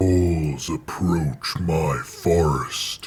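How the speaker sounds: goofy, silly creature voice. Playing the original recording of a creature's line: silly monster voice. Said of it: "it's just me doing a silly voice".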